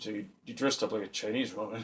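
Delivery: very soft, hushed, disappointed voice. Retelling how someone asked the question, imitating a disappointed tone. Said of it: "it was the way he said it. It was like this, this really disappointing".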